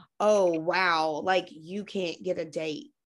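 slow, patronizing, talking-down condescending tone. Retelling what men on dating apps say to her: imitating a condescending tone. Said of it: "saying it in a condescending way".

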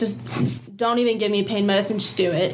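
ordinary delivery

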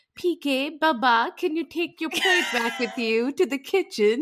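speaking as to a child, mocking. Retelling how she asks him something: imitating talking to him like a child. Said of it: "she does talk to him like a child".

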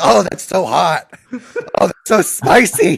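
very slow, loud, high put-on coughing splutter. Acting out a friend faking a cough over spicy food: acting out fake coughing from spicy food. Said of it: "why are you coughing".

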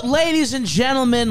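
voice breaking up, cracking very high. Opening the podcast episode with a greeting: voice cracking. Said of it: "my voice cracked".

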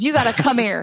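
blunt, curt, angry-sounding delivery. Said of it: "he's not mad at you".

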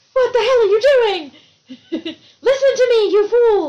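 high, loud, frantic, increasingly urgent voice. Retelling what a group of warning signs says: imitating frantic warning signs. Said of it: "So these signs are getting more frantic".

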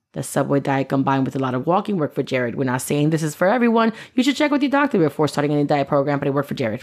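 low, commercial disclaimer-style announcer voice. Quoting the disclaimer from a TV diet ad campaign, commercial disclaimer voice. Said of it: "I love that you did that like a commercial disclaimer".

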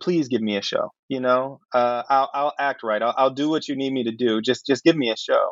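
plain

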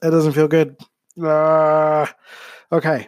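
sputtering, recovering coughs. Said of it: "that went down the wrong pipe".

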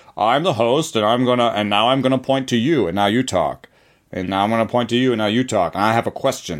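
put-on news anchor voice. Describing how a structured group conversation has to run: Lester Holt voice. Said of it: "Is that your Lester Holt voice?".

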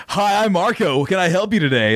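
put-on old-school 1962 surfer dude voice. Imitating how the listener starts every phone call: Marco's phone greeting. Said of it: "He becomes like a surfer dude from like 1962".

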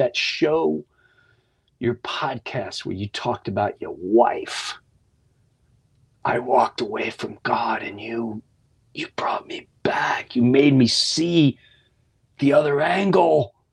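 put-on tearful speech. Retelling what a man said to the speaker about their podcast, imitating tearful speech. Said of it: "And he just started sobbing".

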